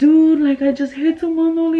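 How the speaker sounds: high, tearful put-on crying, words through tears. Retelling calling a friend after hitting someone: retelling own crying. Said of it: "and I was crying".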